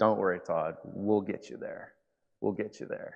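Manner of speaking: soft, soothing, reassuring, calming voice. Speaker recounts being reassured while he worried during recovery, imitating Lisa's calming voice. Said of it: "in her calming voice".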